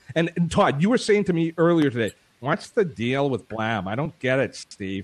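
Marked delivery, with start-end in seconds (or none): 2.4-5.0 slow, drawn-out delivery. Retelling a question asked earlier about Blab: imitating Todd's voice. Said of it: "That was Todd's voice".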